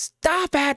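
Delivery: play-acted woman's very high-pitched yell. Describing hearing people fight, retelling a woman's shout. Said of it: "this woman that shouts".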